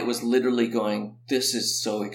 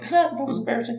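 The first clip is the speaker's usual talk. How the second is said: play-acted, laughing, pitched-up delivery; 12 semitones higher than usual. Retelling coming around the corner after spinning out of a jump, retelling laughing. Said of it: "I came around the corner laughing".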